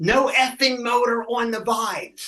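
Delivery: shrill, very high scream from a distance. Retelling a guitarist screaming at him during a show: imitating a guitarist screaming. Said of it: "he screams over at me".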